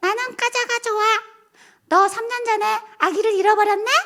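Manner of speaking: put-on tiny, very high little child voice. Retelling a fortune-teller's reading while possessed by a child spirit, imitating a child spirit's voice. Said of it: "애기 동자 신이 실리면 그렇게 말하는 거야".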